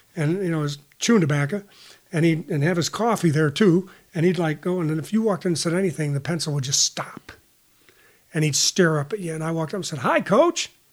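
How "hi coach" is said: put-on, very high, all-happy voice. Retelling walking up to the coach's office: imitating own happy greeting. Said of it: "all happy".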